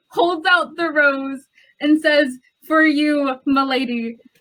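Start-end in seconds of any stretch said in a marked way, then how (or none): 2.6-4.1 grand gallant flourish, theatrical and courtly. Voicing a character kneeling and offering a rose: dramatic in-character line. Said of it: "dramatically gets on one knee".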